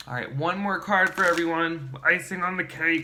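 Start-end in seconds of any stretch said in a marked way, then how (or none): 2.0-3.0 weird froggy put-on puppet voice. Presenting one more card to everyone, in a weird Kermit-like voice. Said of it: "It's a weird voice, right? It's kind of like Kermit".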